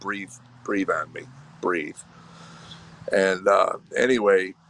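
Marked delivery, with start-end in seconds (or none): 0.0-2.0 soft, sarcastic, scoffing put-on mocking tone. Retelling opening the Bible in hotel rooms, mockingly retelling own words. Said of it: "I'd mockingly open it up and go".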